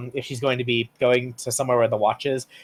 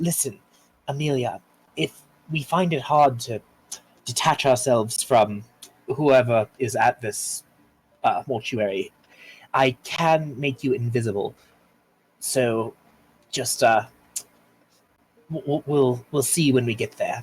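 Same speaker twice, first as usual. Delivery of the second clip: very low, hushed voice. Leaning toward the group as a character, speaking in character: very low voice. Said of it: "and in a very low voice".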